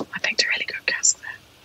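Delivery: very quiet, hushed whisper. Talking about picking a cask, the speaker says this part whispering. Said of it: "I have to whisper that bit".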